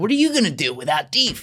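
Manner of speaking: high-pitched, casual, relaxed voice. Retelling what Kish said at the gym: Kish voice. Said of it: "I love your Kish voice".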